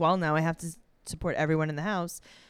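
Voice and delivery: put-on matter-of-fact tone. The speaker acts out what Jade said, mimicking Jade, put-on matter-of-fact. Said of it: "she says it so matter of factly".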